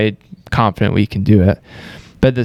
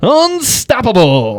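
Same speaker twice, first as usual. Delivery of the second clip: very high, showy, comic character voice; 13 semitones higher, 3 dB louder than usual. Showing how Jim Carrey says it with the mask on. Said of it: "what he does when he's, like, got the mask on".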